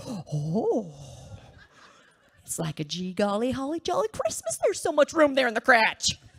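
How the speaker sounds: sing-song high Wisconsin accent with long oh. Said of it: "suddenly I'm talking like this Wisconsin soccer mom".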